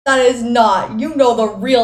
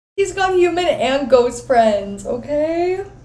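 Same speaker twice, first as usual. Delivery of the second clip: slow, teary voice, tearing up mid-sentence; 4 semitones higher than usual. Reacting to a scene while watching, tearing up while talking. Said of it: "Why am I tearing up?".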